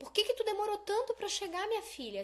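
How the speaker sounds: high, loud, impatient scolding tone.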